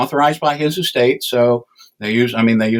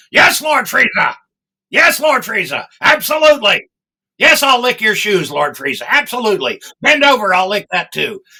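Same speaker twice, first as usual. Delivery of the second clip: high, goofy sidekick-style character voice; 9 semitones higher, 3 dB louder than usual. Showing how the character sounds when talking to Lord Frieza: Captain Ginyu voice. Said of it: "Ginyu talks like this all the time".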